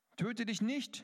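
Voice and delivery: called out high and loud.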